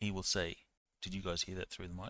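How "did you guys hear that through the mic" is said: hushed, soft half-whisper close to the mic. Acting out what he says into the mic, in a half-whisper. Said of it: "he says in a whisper".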